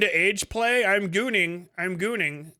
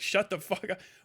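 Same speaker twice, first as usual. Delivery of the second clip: put-on disgusted voice, quieter; 7 dB quieter than usual. Retelling how the wife reacted to the description: imitating a disgusted wife. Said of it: "My wife is disgusted by this".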